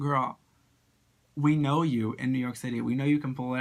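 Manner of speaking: ordinary talk, nothing marked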